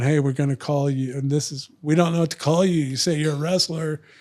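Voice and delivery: ordinary talk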